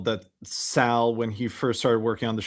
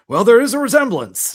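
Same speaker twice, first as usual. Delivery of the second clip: plain, matter-of-fact announcer delivery, very loud and high; 11 semitones higher, 9 dB louder than usual. Retelling a radio bit, imitating an announcer: matter-of-fact John Sterling delivery. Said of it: "Artie's imitation of John Sterling's delivery, delivery was so matter of fact".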